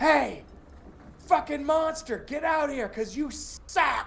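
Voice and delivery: very high, loud taunting holler. Voicing a character luring a monster out: character yelling to lure monster. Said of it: "I'm making noise".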